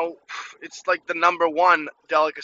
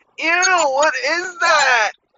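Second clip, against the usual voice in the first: very high, shrill, squealing, drawn-out screech; 11 semitones higher, 6 dB louder than usual. Retelling a girl's reaction to seeing his caviar: imitating a girl's screech. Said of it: "I just hear a girl screech and scream".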